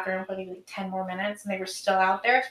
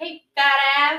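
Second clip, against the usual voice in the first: put-on shouted holler, higher; 7 semitones higher than usual. Imitating what people holler at the speaker: imitating a catcall holler. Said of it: "They'll holler at me".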